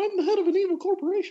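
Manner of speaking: very high, swooping, sing-song cartoon voice. Joking about paying the mouse each month, the speaker does Mickey Mouse voice. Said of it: "That's my impression of Mickey Mouse".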